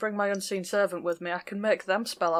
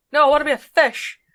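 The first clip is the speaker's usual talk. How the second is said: put-on excited voice, higher and louder; 6 semitones higher, 12 dB louder than usual. Imagining a character gambolling ahead while swimming: imitating excited Trees. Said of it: "while Trees gambles ahead like".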